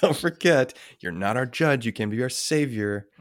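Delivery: mock snarky judging tone. Mocking a breviary prayer line as if scolding Jesus: put-on snarky judging tone. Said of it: "Like a judging tone to Jesus".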